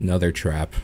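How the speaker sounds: soft, dead flat deadpan tone. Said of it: "deadpanly say".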